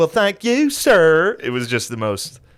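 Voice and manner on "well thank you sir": slow, shrill, high, loud, drawn-out southern drawl. Retelling a man's reply about a missed pizza, in a Zach Galifianakis southern accent. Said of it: "you ever hear like Zach Galifianakis do his southern accent?".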